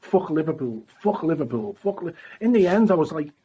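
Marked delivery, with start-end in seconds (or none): none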